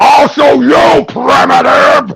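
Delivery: gruff, rough, creaky talking-gorilla voice. Narrating grabbing him, then speaking as Gorilla Grodd. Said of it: "show off my Grodd voice".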